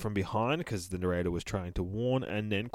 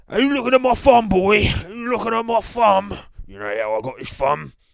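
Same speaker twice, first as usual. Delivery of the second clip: very high, loud cockney villain voice; 11 semitones higher, 8 dB louder than usual. Comparing a character to the Mighty Boosh, the speaker does the green cockney voice. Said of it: "Was he the green fucking cockney?".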